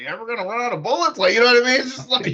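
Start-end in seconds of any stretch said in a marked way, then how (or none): 0.0-1.2 offhand voice, as if thinking aloud alone. Quoting a funny line from a show: imitating Spider-Noir talking to himself. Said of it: "he sounds like he's just talking to himself".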